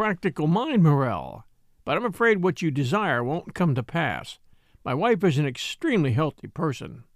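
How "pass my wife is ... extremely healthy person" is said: plain reading voice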